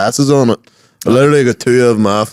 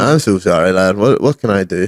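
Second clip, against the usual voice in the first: usual speaking voice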